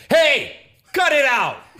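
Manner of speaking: drawn-out commanding shout. Showing how a parent tells a misbehaving kid off: loud raised voice. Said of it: "I raise my voice though instead of spanking".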